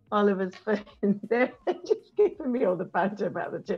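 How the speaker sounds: speech mixed with laughter. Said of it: "I'm laughing there".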